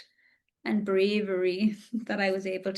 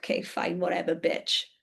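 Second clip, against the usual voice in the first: put-on chuckling voice, much lower pitch; 3 semitones lower than usual. Retelling a breakup, acting out the partner's reply, retelling his chuckling reply. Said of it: "And he's like chuckling".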